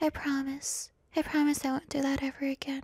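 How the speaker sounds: put-on girly voice, high, soft, sweet, pleading whisper. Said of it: "don't I do a really good impression".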